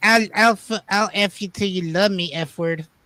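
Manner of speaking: stumbling, deliberate, slow, drawn-out boxer voice. Quoting a famous interview line: Mike Tyson impression. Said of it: "He's like".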